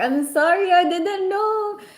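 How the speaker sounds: high, slow, mock tearful crying voice. Retelling when a boyfriend got mad at them: imitating own past crying. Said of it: "and so I was like crying".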